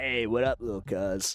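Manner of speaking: slow, slightly raspy voice. Doing an impression of a late cousin: impression of my cousin. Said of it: "can I do an impression of my cousin?".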